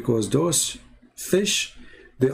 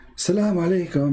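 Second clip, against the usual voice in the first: markedly feminine put-on voice; 4 semitones higher than usual. Retelling how a woman made fun of two sheikhs: very feminine voice. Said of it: "like in a very like a feminine voice".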